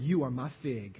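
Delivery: laughing, said with earnest conviction. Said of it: "You better say it like you meant it".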